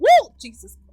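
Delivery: high, loud startled whoop.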